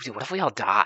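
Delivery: put-on typical oh-my-god girl voice. Describing a movie character, imitating Heather's "oh my god" girl voice. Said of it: "like a typical, like, "Oh my god" type of girl".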